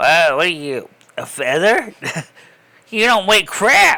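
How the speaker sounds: loud, swooping, snarky, sarcastic talking-scale jeer. Voicing a smart scale that talks to its owner: sarcastic talking scale voice. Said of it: "like a sarcastic person".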